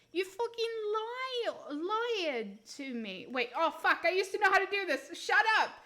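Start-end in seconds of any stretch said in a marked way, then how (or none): 0.1-3.2 slow put-on New Jersey accent, drawn-out "lied". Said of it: "the New Jersey".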